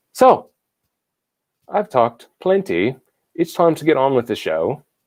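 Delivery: put-on, fake British accent. Wrapping up an intro before welcoming a guest: put-on UK accent. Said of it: "How's that for my U K accent?".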